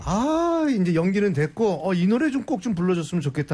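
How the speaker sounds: plain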